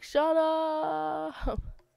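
mock high cry, up drawn out. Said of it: "She's like".

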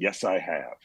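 flat, expressionless delivery. Retelling a story about a husband's reply at breakfast: imitating a deadpan reply. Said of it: "just dead eyes or a deadpans".

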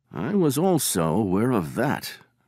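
languid, unbothered, lazily tossed off. Holmes answers his visitor while settling into his armchair, murmured. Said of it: "murmured Holmes".

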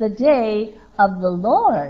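words "day" and "Lord" each given heavy stress. Showing how he emphasized a phrase, emphasis on the day of the Lord. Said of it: "he emphasized it like this".

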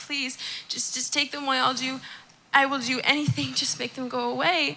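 mock, imitated begging and pleading tone. Retelling their own prayer to God from last night, retelling a begging prayer. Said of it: "I was like begging God".

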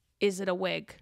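flat deadpan voice. Retelling what a man asked her after she tried to change the subject: retelling a deadpan question. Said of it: "he looks at me deadpan".

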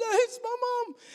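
crying out, tearful, pitched very high. Retelling a man's words as he got emotional, imitating someone crying. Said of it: "Ambu starts crying and he gets so emotional".

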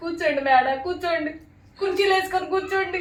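wailing, mourning lament.

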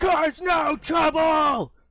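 loud, high screaming. Voicing a guard waving the party in: screaming guard. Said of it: "And the one screams".

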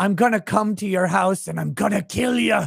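put-on Irish-accented delivery. Retelling a man's reply when asked whom he wants to call out; irish accent. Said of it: "he's speaking in an Irish accent".

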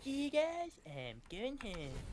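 high, swinging pitch. On a live stream, doing a Cartman impression. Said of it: "What is that voice? It's amazing".

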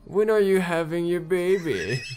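put-on loud, masculine-sounding old woman voice. Taking on an old lady character's voice for the group, in a manly old lady voice. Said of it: "manly voice of an old lady".

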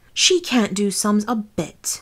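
strong, hammering emphasis on every word. The two Queens speak together about Alice, with great emphasis. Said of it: "the Queens said together with great emphasis".

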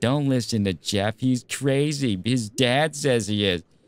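slow, annoying, insufferable devil voice. Telling a woman what the devil said in her head, annoying devil voice. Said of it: "that's the devil voice I do".

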